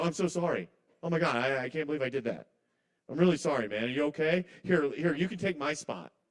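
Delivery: put-on gushing, overly apologetic, sorry laid on. Retelling an over-apologetic bit done to a rude man: mock over-apologetic. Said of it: "I'm kinda doing a bit".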